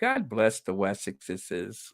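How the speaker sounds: heaviest mocking sarcasm, swooping sing-song. Commenting on the Wessexes: most sarcastic tone. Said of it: "as I say in my most sarcastic tone".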